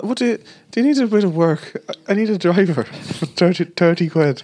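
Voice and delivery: terrible put-on Irish accent. Retelling what a man on parole offered, in a terrible Irish accent. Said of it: "That's a terrible Irish accent".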